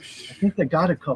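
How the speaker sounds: hushed, soft, breathy, barely voiced whisper. Speaker retells what she whispered to him, retelling a whisper. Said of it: "And she whispered".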